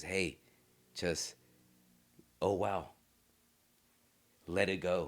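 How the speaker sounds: gentle, slow angel-on-the-shoulder voice. Describing competing voices in your head, the speaker does the angel voice. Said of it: "this angel voice says".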